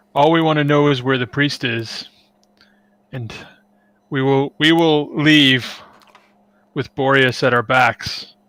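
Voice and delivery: put-on menace, every word threatening. Playing a character who leans in to question a man, menacing voice. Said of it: "try and put on the menacing voice".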